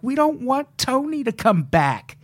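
high, scared, pleading voice. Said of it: "legitimately scared".

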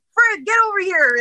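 high-pitched, eager calling out.

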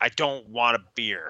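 mock slow, angry, annoyed man voice. Recounting a movie scene at a bar, imitating an angry man. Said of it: "And he's pissed".

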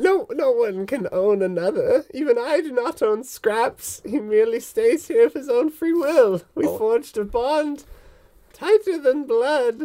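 put-on very high-pitched elderly woman's voice. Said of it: "Where she's like a straight up plump, rounded old woman. She's got warts and stuff. / Where she's like a straight up plump, rounded old woman. She's got warts and stuff. / It was old lady voice. / (op".

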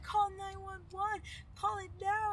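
high, slow, panicked pleading.

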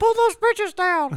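very high, put-on costumed mascot accent. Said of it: "what accent does Mickey talk in".

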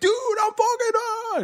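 put-on freaked-out cry, pitched very high. Retelling how a sober friend reacted to police stops: imitating a friend freaking out. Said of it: "He'd freak out".

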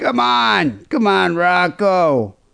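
very slow, drawn out, swooping up and down in pitch. Imitating Paulie on the bike cheering on a fighter: Paulie from Rocky impression. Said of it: "Like in Rocky, Paulie would be on the bike".

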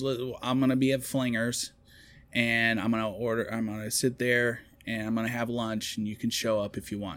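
ordinary talk, nothing marked

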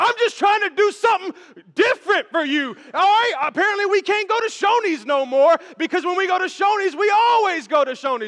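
very loud, high-pitched, heated yelling. Retelling what a man shouted during an argument, retelling a yell. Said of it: "he starts yelling".

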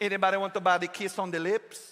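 bad, fake Jamaican accent. Imagining a man selling fancy drinks, doing him in a bad Jamaican accent. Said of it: "that's not even Jamaican accent, but it's the best I got".

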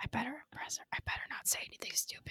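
hushed, breathy, nervous whisper. Recalling her own thoughts while calling in to a show, whispering. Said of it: "I don't know why I'm whispering".

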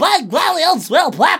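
put-on very high, loud, old-timey 1940s kid voice. Describing the character they would be on the podcast: old-timey 1940s kid voice. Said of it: "like one of those 1940s kids".

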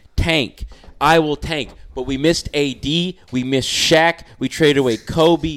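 mad, heated. Debating with another speaker, mad. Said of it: "The reason why I'm mad".

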